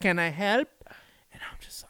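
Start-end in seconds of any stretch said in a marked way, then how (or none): 0.0-0.7 attempted, put-on Mexican accent. Retelling what a lady said, imitating her put-on mexican accent. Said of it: "she tries to make, like, an accent".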